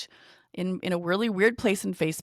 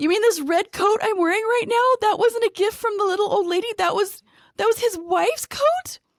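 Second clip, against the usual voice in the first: acted-out panicky, frantic, alarmed freaking-out voice; 13 semitones higher, 5 dB louder than usual. Retelling a woman's growing alarm about the coat she wears, imitating her panicky voice. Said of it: "she gets even more panicky and she said".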